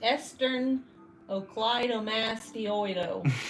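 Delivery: loud, over-the-top American accent, word mangled. Pronouncing a term horribly on purpose, in an exaggerated American accent. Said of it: "I wanted to sound super American and uneducated when trying to say it".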